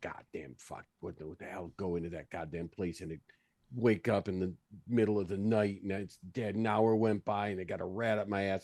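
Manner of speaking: angry curses muttered under the breath. Storming out after someone while trying to stay quiet, mumbling to himself. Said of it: "as you're kind of mumbling to yourself".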